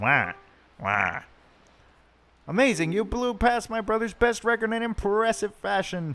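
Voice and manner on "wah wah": very low cartoon wah, pitch dropping on each wah. Voicing a game character's reaction, switching into a Wario voice. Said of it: "in the Wario voice".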